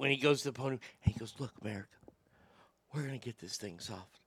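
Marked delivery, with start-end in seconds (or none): 1.4-4.1 hushed, breathy, very quiet whisper. Mocking the president at a podium, imitating Joe Biden whispering. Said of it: "When he starts whispering".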